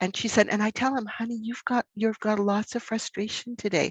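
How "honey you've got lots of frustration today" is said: put-on soft gentle voice, quieter and slower. Quoting a gentle mother speaking to her frustrated son, imitating a soft gentle voice. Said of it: "I don't think she's ever raised her voice".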